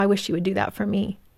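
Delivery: quiet, softly spoken. Speaker retells what their date said after seeing them hug a friend: quietly. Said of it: "just really kind of quietly said".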